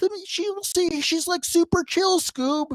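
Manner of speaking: very high-pitched cartoon character voice. Acting out a character in the show, halfway decent Shaggy voice. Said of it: "That's actually a halfway decent Shaggy".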